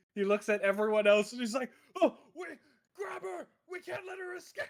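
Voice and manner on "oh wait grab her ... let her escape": very high, shrieking scream. Voicing Tareth ordering everyone to capture her: Tareth screaming. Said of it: "he starts screaming that we all need to capture her".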